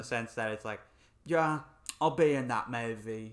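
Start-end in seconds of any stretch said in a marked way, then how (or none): 1.2-3.3 slow, drawn-out, easy voice. Imitating an actor agreeing to a movie role: Idris Elba impression. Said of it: "No, that was Idris Elba".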